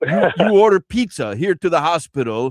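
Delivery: very bad, exaggerated put-on Iranian accent. Retelling a TV episode scene where he confronts a hospital patient, worst Iranian accent. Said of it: "this is the worst Iranian accent".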